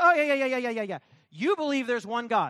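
damning, biting, mock sarcastic tone. Acting out a biblical writer mocking his debate opponent: imitating sarcastic mockery. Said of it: "he's quite sarcastic here".

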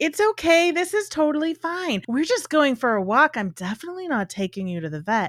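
sugary, overly cheerful, overly friendly high voice. Explaining how animals read a pet owner's vet voice, in an overly friendly, happy voice. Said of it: "overly friendly, overly happy voice".

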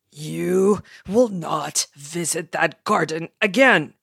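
loud, growled, commanding dragon-like voice. Narrator voicing the dragon father scolding his son, in a growling father voice. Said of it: "his father growled".

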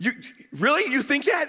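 mock stunned disbelief. Retelling a woman's surprised reply to an answer: imitating someone shocked.

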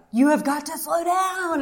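high-pitched yell. Retelling a speeding drive with an infant, a passenger yells at the driver: imitating Brandon yelling. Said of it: "yelling at me".

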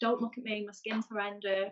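ordinary talk

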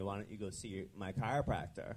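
normal talking voice

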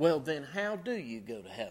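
mock, utterly disbelieving and baffled tone. Retelling a lady's question about getting to heaven: imitating a very incredulous tone. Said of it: "in a very incredulous tone".

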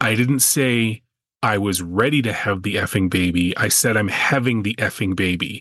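plain

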